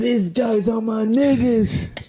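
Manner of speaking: play-acted, held-back high yell. Telling a story about a night at a bar, quoting a guy, retelling a scream. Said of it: "he screams like".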